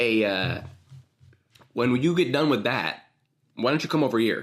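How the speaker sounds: put-on Chicago accent, round vowels, hard consonants. Working on an accent, the speaker asks the others to judge it: Chicago accent. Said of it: "I'm trying to work on my Chicago accent".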